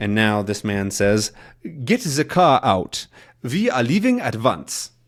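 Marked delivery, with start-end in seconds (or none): 1.6-4.9 fake, put-on German accent. Narrating a man in a Tintin scene ordering the car out, in a put-on German accent. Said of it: "that's my German accent again".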